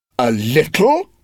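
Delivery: cross, angry retort. Reading her reply to his careless remark, angry. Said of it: "She replied angrily".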